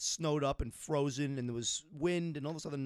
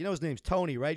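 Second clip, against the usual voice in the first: ordinary talk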